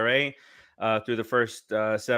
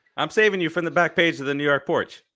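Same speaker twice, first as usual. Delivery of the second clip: full-on, high-pitched yelling; 5 semitones higher, 3 dB louder than usual. Arguing with a fellow panelist about baseball, yelling. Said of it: "why are you yelling at him?".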